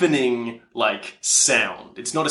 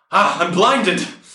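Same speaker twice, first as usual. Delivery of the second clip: sudden raised high-pitched yelled cry; 6 semitones higher, 5 dB louder than usual. Voicing a character blinded by a cloud of smoke: yelling out. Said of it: "Valeria yells out".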